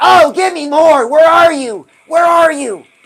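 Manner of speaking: high, loud, shouting, demanding voice.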